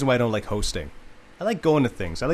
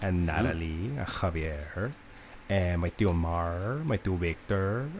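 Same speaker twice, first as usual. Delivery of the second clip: put-on, slow, blended pan-Latin American accent; 6 semitones lower, 7 dB quieter than usual. Reading out the names in a love club, in a mixed Latin American accent. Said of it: "that accent doesn't actually come from anywhere".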